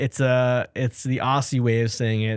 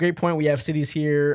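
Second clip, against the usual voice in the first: ordinary talk, nothing marked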